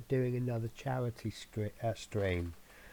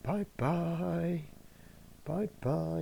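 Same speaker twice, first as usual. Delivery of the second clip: high-pitched pet cat voice. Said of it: "I'm gonna get Spirit to say hello to you".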